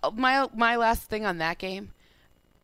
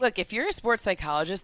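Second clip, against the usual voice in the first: ordinary delivery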